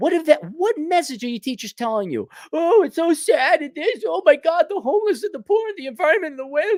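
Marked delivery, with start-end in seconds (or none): 2.5-6.7 put-on whiny moan. Mocking what teachers tell students, imitating a whiny voice. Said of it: "they sound like a bunch of whiny little loser bitches".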